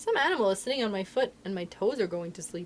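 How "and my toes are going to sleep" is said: ordinary delivery, nothing marked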